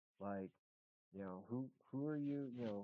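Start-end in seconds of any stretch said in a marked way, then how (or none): 1.5-2.5 yelling, higher pitch. Retelling how a hunter on the property yelled: imitating someone yelling. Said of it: "he starts yelling at me".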